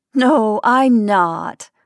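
through a laugh. The narrator answers Kate, who thinks she is homesick: laughing. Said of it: "laughing and feeling ashamed".

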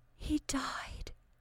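weak, breathy, faint whispered outburst. A woman interrupts the account of her father, exclaiming faintly. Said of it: "exclaimed Dorcas faintly".

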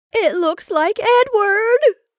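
very high, frenzied, panicked burst of terror. Rebecca bursts out after her sister stammers, in a frenzy of fear. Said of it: "burst out Rebecca in a sort of frenzy of fear".

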